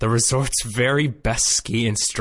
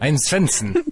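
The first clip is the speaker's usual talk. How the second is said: fake Swedish accent, higher pitch; 4 semitones higher than usual. Discussing an American actor's Swedish accent, then trying a fake Swedish accent. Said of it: "an American actor just trying to do a Swedish accent".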